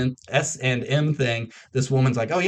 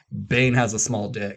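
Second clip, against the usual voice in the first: normal talking voice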